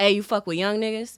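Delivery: put-on young man voice. Retelling what a young man on an elevator said: imitating a young man. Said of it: "He goes".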